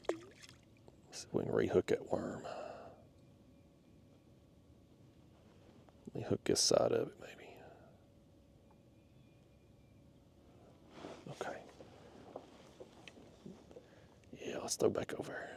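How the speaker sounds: hushed whispering under the breath. Fishing and rehooking a worm, suddenly whispering. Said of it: "I don't know why I'm whispering all of a sudden".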